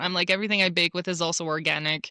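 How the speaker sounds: ordinary delivery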